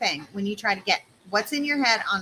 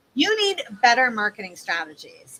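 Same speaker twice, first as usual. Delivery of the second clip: scolding, kindergarten-teacher tone. Showing a bad way to phrase marketing copy: scolding tone. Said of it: "this feels like you're getting scolded".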